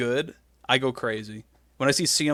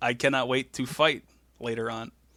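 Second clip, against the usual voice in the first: plain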